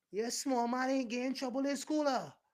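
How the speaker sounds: imitated yelling. Retelling how people yelled news down the street: imitating neighbors yelling. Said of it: "you would actually hear people yelling".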